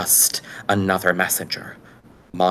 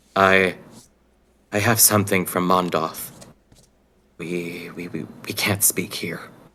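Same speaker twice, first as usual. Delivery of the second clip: low, controlled, hushed, guarded, stumbling murmur. Voicing a character who approaches someone and shows a medallion, in a low, controlled voice. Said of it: "in a very low, controlled voice that only he can hear".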